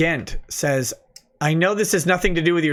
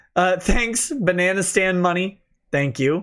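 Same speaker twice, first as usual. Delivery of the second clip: normal talking voice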